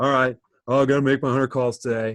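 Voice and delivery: put-on dopey, dim-witted dumb guy voice. A speaker acts out how some people approach their daily work, in a dumb guy voice. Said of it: "you got that's your dumb".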